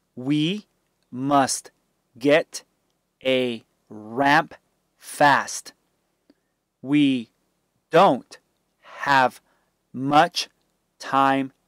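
plain reading voice

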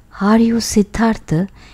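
shy, timid, tentative voice. The monk asks the ferryman whether he is Siddhartha, in a timid voice. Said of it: "he asked in a timid voice".

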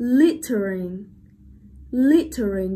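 slow, loud littering with first syllable stressed. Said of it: "ing sẽ không ảnh hưởng đến dấu trọng âm".

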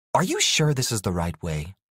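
plain reading voice

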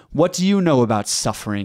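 put-on patronizing, condescending, scornful, talking-down tone. Speaker quoting people who comment on their videos, mocking a condescending tone. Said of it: "in their condescending tones".

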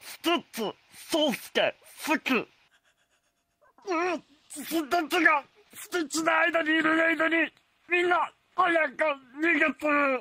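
put-on, very high cartoon alien creature voice. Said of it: "スティッチのモノマネやります".

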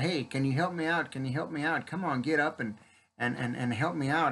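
ordinary talk

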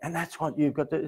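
earnest, heartfelt delivery. Redoing a line from a commercial, sounding like someone who really cares. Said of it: "sounded like I really cared".

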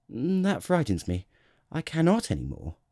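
abashed, embarrassed. Ordered by the king to yawn again, the child answers with an abashed murmur. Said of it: "murmured the little prince, now completely abashed".

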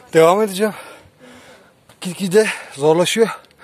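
out of breath, panting. Climbing on toward the castle while narrating to viewers, out of breath. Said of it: "Nefes nefese kaldı".

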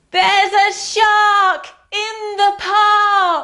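very high, loudest crying-out voice, "park" stretched. Reading a story aloud to listeners as Timothy cries out, in his loudest voice. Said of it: "In his loudest voice".

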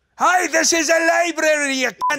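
put-on Scotsman voice, Scottish accent. Playing the Scotsman as a librarian, scolding patrons: Scotsman voice. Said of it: "the Scotsman as a librarian".

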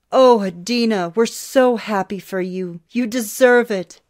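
loud, drawn-out, effusive, overflowing gushing. Hearing adeena was offered an orchestra position, he responds, gushing. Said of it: "he gushed".

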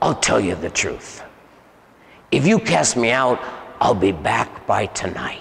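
heavy, deep-voiced man with a low voice. Recounting casting him out, the speaker quotes his threat: deep man's voice. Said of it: "he was talking like in a deep man's voice".

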